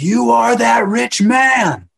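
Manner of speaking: shrill, full-volume, high-pitched yelling. Recounting confronting people on their phones who ignored the story, retelling a yell. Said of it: "And I yelled at him".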